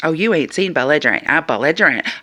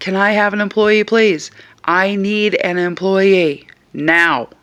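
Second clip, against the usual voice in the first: put-on calm, steady, firm, insistent tone, no panic; 4 semitones higher than usual. Retelling a confrontation with a shopper who cursed at a companion, retelling a loud but calm request. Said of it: "I very loudly but calmly went".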